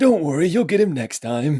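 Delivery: put-on voice of an aged old man wizard. Narrating the game, the speaker voices a wizard consoling a player: old man wizard voice. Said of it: "You hear this voice of this old man wizard say".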